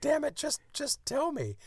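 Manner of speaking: very high, frightened, scared pleading voice. Retelling a character demanding answers: imitating Jack scared. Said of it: "and he's scared too".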